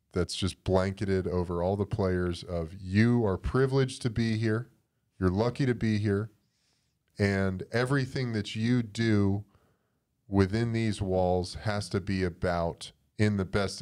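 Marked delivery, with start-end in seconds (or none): none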